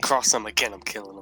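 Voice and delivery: low, soft, menacing mumble. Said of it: "I mumble that to myself".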